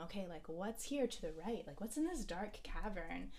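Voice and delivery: ordinary talk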